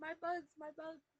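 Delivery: high-pitched, screaming cry. Retelling the movie ending as the bugs fall: Oogie Boogie screaming. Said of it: "And he starts screaming".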